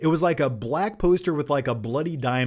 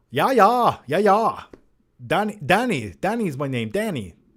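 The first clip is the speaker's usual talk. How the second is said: bad put-on South African accent; 4 semitones higher than usual. Recommending a movie and imitating its lead actor: Leonardo DiCaprio South African accent. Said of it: "he kinda talks like this".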